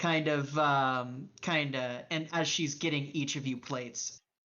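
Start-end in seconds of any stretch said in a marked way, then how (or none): none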